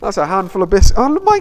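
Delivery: startled, sudden outburst.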